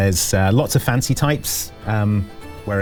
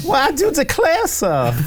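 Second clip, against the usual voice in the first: put-on fancy lady voice, much higher pitch. Playing a passing fancy lady answering a fancy man, in a fancy lady voice. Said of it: "A passing fancy lady goes".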